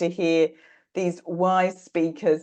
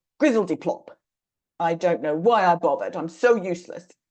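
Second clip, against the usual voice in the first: mean, harshly critical voice. Presenter voicing the inner critic after a child isn't picked, in Crusher's mean voice. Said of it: "And then Crusher says".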